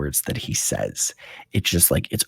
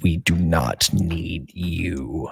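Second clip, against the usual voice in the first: loud booming grating voice. Voicing the Core speaking to Robbie: booming, grating voice. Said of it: "this booming, grating voice".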